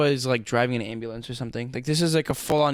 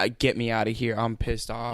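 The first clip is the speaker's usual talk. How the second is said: mock annoyed, pissed-off voice. Retelling how a rude customer at the drive-through sounded: imitating a pissed-off customer. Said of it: "He just sounded like".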